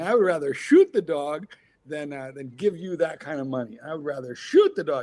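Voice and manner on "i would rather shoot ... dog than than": plain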